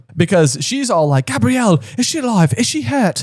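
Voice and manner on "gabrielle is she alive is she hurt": terrible put-on French accent, pitched up. Quoting what she said in a terrible French accent. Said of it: "I have a terrible French accent".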